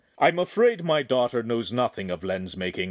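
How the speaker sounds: usual speaking voice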